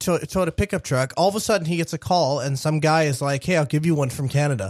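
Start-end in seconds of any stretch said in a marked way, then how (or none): none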